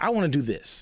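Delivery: plain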